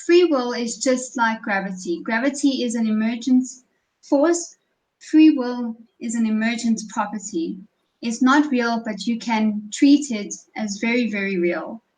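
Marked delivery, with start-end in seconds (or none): none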